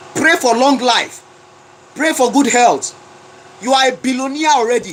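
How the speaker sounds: fired-up, forceful, shout-style proclaiming. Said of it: "I don't even know why I'm shouting".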